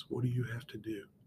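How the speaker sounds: very quiet, hushed half-whisper. Speaker showing listeners why they have to lean in, half-whispering. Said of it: "if I start whispering like this".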